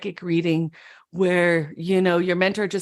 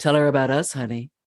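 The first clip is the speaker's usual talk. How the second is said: low, husky, dropped-down voice; 5 semitones lower than usual. Retelling what a woman finally came and said to the speaker, imitating a husky voice. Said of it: "she had a husky voice".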